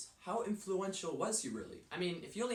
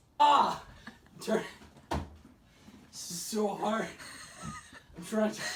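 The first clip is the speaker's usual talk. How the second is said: loud, very slow words through tearful laughter; 4 semitones higher, 8 dB louder than usual. Trying to talk through a laughing fit, laughing to tears while talking. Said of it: "are you crying right now?".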